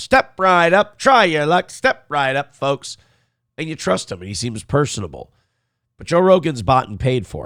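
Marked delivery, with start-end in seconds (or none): 0.0-3.0 fairground showman's spiel, like a sideshow barker. Picturing someone drawing a crowd into a carnival tent: Joe Rogan as carnival barker. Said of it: "Joe's the carnival barker telling people".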